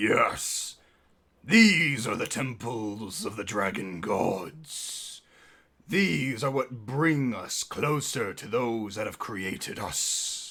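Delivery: deep, low creature voice. Answering another character's question in the story, in a deep voice. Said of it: "And with a deep voice".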